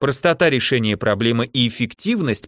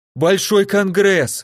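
sudden, high, blurted-out shouted outburst; 9 semitones higher, 3 dB louder than usual. Narrator voices a man blurting the first thing on his mind as a woman approaches: shouting. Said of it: "закричал он".

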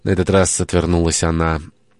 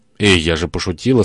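usual speaking voice

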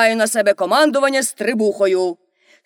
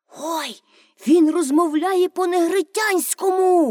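delighted, eager, excited outburst, high pitch; 7 semitones higher than usual. A listener hears the captain's strange words and exclaims excitedly. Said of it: "захоплено вигукнув Томі".

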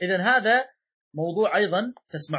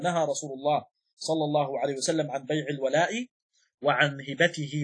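ordinary talk

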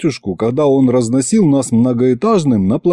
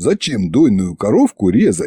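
usual speaking voice

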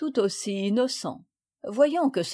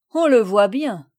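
very loud, scornful, disdainful delivery; 8 dB louder than usual. Mademoiselle Yolande answers Marguerite about Paul, with disdain. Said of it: "avec dédain".

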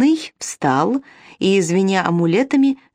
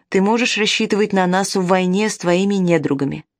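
ordinary delivery

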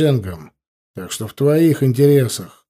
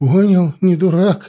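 shaky, trembling, frightened, higher pitch; 5 semitones higher than usual. A bandit answers the narrator's threats in a trembling voice. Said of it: "ответил бандит дрожащим голосом".

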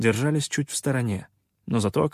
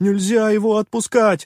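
trembling, very high, loud shaky shout; 10 semitones higher, 7 dB louder than usual. Narrator reading a character's outburst, in a trembling shouted voice. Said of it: "дрожащим голосом выкрикнул".

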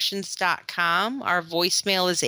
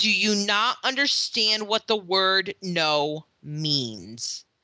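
very stern, no-nonsense, scolding tone. Recounting what they finally said to a boy who kept asking, retelling a very stern voice. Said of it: "said to him in a very stern voice".

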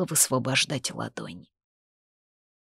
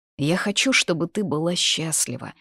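plain

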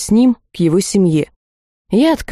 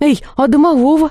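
exclaiming, calling out, much higher; 7 semitones higher than usual. In a story, a student calls out to the head of school as he dismisses them, exclaiming. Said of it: "воскликнула я".

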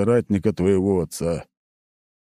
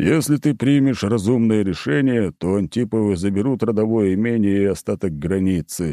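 ordinary delivery

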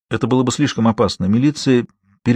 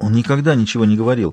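ordinary delivery

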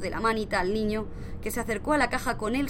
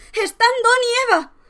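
very high, loud, screeching shriek; 13 semitones higher, 12 dB louder than usual. Reading a story aloud, voicing a woman crying out during a family lottery draw: shrieking. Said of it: "exclamó la señora Hutchinson con un chillido".

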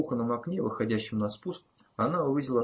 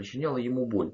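plain

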